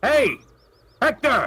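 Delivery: shouting. Calling out in character to stop another character: yelling. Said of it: "I'll yell".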